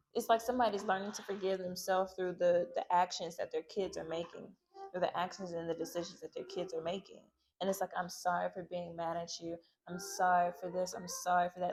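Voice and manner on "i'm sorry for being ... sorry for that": put-on, profusely apologetic, contrite voice. Describing a parent apologizing to their kids, imitating an apologetic parent. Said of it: "somebody is very apologetic".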